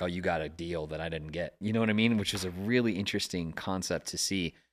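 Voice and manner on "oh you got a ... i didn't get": normal talking voice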